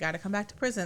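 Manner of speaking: put-on sweet, easygoing, friendly coaxing manner. Retelling a movie scene, the Rambo lady calling them back to prison: imitating someone being nice. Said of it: "being all nice about it".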